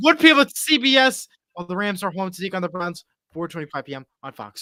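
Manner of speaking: fast, hurried, rattled-off sportscaster delivery. A host listing upcoming games and broadcast times, talking really fast. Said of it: "Sorry if I'm talking really fast".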